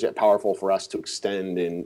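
normal talking voice

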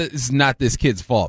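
ordinary delivery

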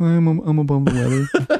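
flat put-on character voice. Saying a phrase like a movie character would, Napoleon Dynamite voice. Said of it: "you couldn't say it like Napoleon Dynamite. Like".

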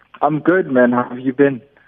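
bright, friendly, jovial and cheerful. Guest joining the host on the line and returning the greeting, jovial. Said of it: "You sound very jovial".

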